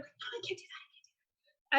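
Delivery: soft, unvoiced, worried whisper. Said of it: "they're whispering to each other".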